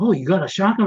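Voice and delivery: put-on thrilled, kid-like, high excited exclamation. Retelling his reaction to being shown the new shotgun, imitating someone excited. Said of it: "Like he was so excited".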